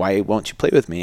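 put-on tearful, crying child voice. Retelling a child's tearful plea to keep playing: imitating a crying child. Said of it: "she was just, like, crying, like".

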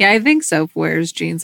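ordinary talk, nothing marked

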